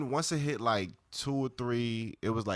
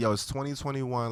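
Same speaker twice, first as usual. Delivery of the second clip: ordinary delivery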